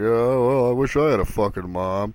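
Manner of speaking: put-on sarcastic tone. Telling an audience how Daniel jokes, imitating Daniel's sarcasm. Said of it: "all sarcastically".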